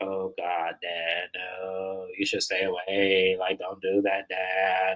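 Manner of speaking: put-on monotone nasal voice. Mocking a reality show cast member's talk: imitating Brooks' monotone nasal voice. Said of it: "It's the monotone mixed with the nasal".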